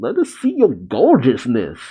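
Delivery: normal talking voice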